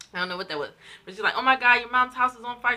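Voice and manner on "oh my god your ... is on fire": very loud, panicked, top-of-the-lungs shriek. Quoting what a woman screamed at the top of her lungs, retelling a scream. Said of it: "She's screaming at the top of her lungs".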